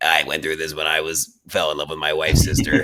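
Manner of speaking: deep, modulated, voice-changer voice. Retelling a masked character's line through a bullhorn: imitating a modulated masked voice. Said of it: "with the modulated voice".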